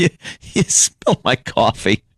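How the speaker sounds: slow, chuckling, ironic rage leaking through. Retelling the man's reply from the ad: imitating a chuckling rage. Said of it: "he looks at her with kind of with a chuckle".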